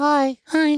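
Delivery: very high, silly mock squeak.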